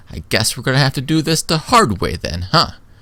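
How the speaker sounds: put-on defiant tough-kid voice. Voicing a kid who puts up his fists against the others: voicing a defiant kid. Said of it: "he uncurls his arm and he goes".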